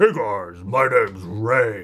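super deep, slow, drawn-out voice. Showing listeners who may not have heard Ray what he sounds like, in a super deep Ray voice. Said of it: "but it's super deep".

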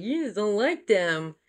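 daft, clownish, goofy, silly delivery. Quoting Olivia's reply to someone about strong boundaries, imitating Olivia's goofy way. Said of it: "she said it in like this goofy way".

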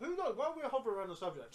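speaking while chewing food, mouth full. Mid-conversation about an upcoming boxing fight, talking with mouth full. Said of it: "I'm speaking with my mouth full".

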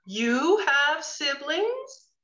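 slow-motion drawn-out speech. In a scene, one character asks another about siblings, talking in slow motion. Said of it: "talking slow-mo".

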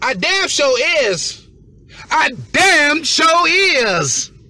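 very loud, very high, shrill, drawn-out yell. Talking to his audience from his car in the rain, yelling. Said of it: "Sorry for yelling".

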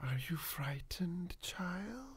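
eerie, high monster voice, barely a whisper. Voicing the boogeyman under the bed calling to a child: boogeyman whispering. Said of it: "starts whispering".

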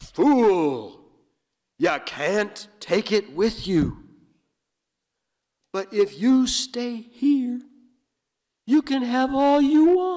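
big booming voice, very high, loud, shrill, rising. Retelling a story, voicing a voice that echoes across the landscape: big booming voice. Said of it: "big booming voice that echoes out".

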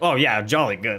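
mocking, put-on tone of agreement. Retelling a movie character's reply to other characters: imitating a mocking reply. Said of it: "he's, like, mocking them".

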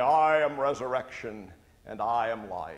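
resonant, sonorous priestly pulpit intoning. A rector recalls standing to speak at the service; sonorous rector voice. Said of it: "with my sonorous rector voice say".

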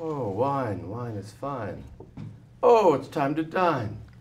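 loud, calling-out vendor voice. In an improv bit, doing the hot dog vendor character in Nelson Hepburn character voice. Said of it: "That's Nelson Hepburn, a hot dog vendor".

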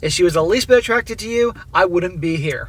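ordinary delivery

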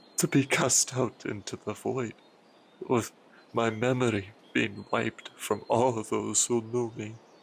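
distressed, troubled, guilt-ridden tone. A student confesses to his master: troubled, guilt-ridden. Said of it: "The student, [name], is once again troubled. / while he turned his whole face toward the earth, / The student, [name], is once again troubled. / I had committed a most terrible sin. I feel naught but".

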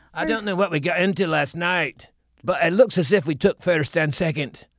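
put-on Irish accent, performed for show. Asked to do an accent, the speaker tries an Irish accent. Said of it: "I'm good at Irish".

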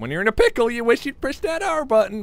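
voice breaking mid-line, cracking up high. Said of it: "Why did my voice crack?".

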